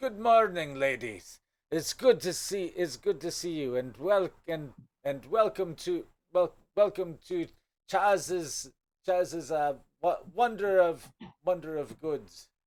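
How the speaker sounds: grand showman voice. A merchant greets the visiting ladies and welcomes them in, smiling widely. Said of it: "smiles widely, sweeps off his hat, and says".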